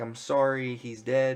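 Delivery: normal talking voice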